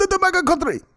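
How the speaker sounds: put-on Nigerian accent. Repeating the phrase once more in accent, imitating a Nigerian accent. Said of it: "That's the perfect Nigerian".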